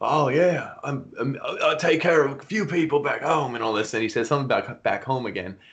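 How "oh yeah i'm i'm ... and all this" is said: put-on Australian accent. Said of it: "he has the Australian accent".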